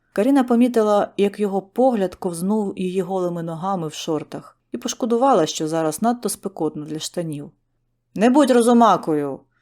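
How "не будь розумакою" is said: sharp, barked, high, loud snap. During an argument, a mother speaks to her daughter, snapping. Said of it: "рявкнула мати".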